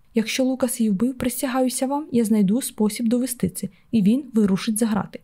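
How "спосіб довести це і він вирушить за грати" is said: ordinary delivery, nothing marked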